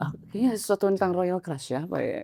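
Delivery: soft, dreamy, drowsy musing, half asleep.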